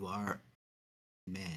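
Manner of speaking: whispering in a character voice. Whispering in character to another party member. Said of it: "I just whisper".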